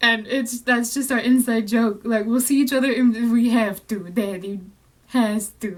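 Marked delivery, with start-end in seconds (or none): 3.3-5.8 mafia-boss voice, lower and slower. Quoting an inside joke shared with her brother, in a little Godfather voice. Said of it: "he's got like the little Godfather voice".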